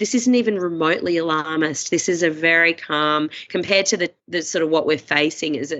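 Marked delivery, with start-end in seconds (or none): none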